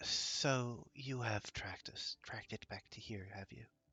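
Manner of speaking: quiet and hushed, under the breath. Voicing a woman who knows the party tracked them here, in a hushed voice. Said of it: "she in a hushed voice".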